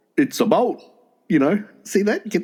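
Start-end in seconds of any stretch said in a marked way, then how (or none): 0.2-0.8 put-on Canadian accent. Showing another speaker a joke Canadian accent: put-on Canadian accent. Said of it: "Go on".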